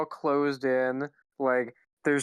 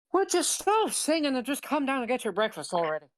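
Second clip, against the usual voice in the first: very high, swooping, sing-songy cartoon voice; 10 semitones higher than usual. Calling from downstairs, a character tells someone to come to breakfast, in a bad Mickey Mouse voice. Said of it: "You sound like Mickey Mouse".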